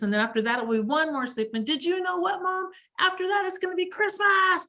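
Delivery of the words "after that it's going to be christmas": bellowed, high heavy-metal death rocker roar. Relaying a daughter's message about counting sleeps, speaker delivers its last line in a death rocker bellow. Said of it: "she bellows out in a death rocker voice".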